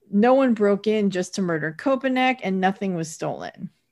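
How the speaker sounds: ordinary talk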